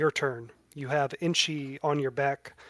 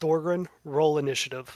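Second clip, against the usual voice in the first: ordinary delivery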